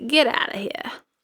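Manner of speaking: sort-of put-on Boston accent. Retelling a court's response to an appeal, in an attempted Boston accent. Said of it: "I tried to use some sort of Boston".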